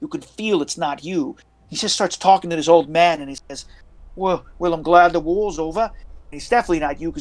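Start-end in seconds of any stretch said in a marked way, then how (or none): 4.1-5.8 put-on British accent. Acting out what a man says to an old man, British accent. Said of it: "you could hear the British accent".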